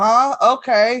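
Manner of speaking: put-on groggy, half-asleep voice. Retelling being woken at night by a stranger, imitating being half asleep. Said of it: "I'm all half asleep".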